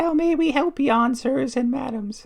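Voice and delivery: very high, squeaky, tiny little voice. Narrator voicing someone unseen behind a counter, in a tiny voice. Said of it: "a tiny voice from behind the counter says".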